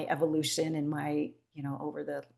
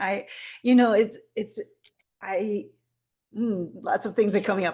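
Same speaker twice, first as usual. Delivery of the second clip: stammering, tripping over words, louder and pitched up; 6 semitones higher, 9 dB louder than usual. Guest answering the host's question about a past session, stuttering. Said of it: "I'm stuttering".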